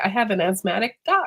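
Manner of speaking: plain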